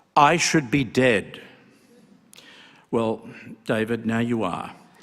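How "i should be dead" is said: slow, resounding delivery. Speaker remembering David quotes the opening of his speech, in David's booming voice. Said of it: "in a very booming voice".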